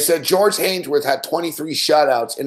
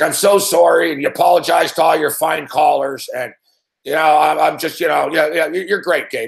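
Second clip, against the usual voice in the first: put-on drunk voice. Retelling a caller's apologetic phone call: imitating drunk Graham. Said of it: "he's drunk".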